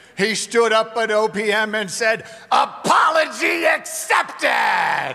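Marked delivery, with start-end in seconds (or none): 2.5-5.1 put-on cheerful, good-natured shout in heavy New York accent. Paying tribute to Frank, quote what he stood up and said at OPM, in Frank's cheerful, heavy New York accent. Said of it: "in Frank's good cheer and heavy New York accent".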